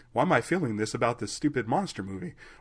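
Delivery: ordinary talk, nothing marked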